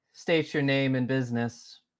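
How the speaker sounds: very robotic, mechanical, automated machine voice. Players ask a space station where to park; it answers in a very robotic voice. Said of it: "You get a very robotic voice back being like".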